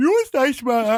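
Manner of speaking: talk through a yawn. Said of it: "I'm sorry I'm yawning so much".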